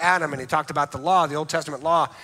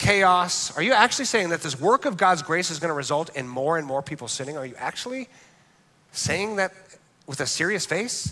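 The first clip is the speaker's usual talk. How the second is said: usual speaking voice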